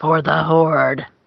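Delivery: fantasy game orc voice. Ending a joke sign-off on the show, in an orc voice. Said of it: "you really sounded like an orc just there".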